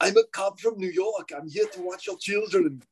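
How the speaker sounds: put-on Austrian accent. Acting out a character introducing himself to the parents, in a put-on austrian accent. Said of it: "You don't sound like you're".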